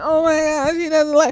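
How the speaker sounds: put-on hurt flustered girl's voice. Retelling a scene where a girl runs off: imitating an upset girl. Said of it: "is so upset, just so bothered".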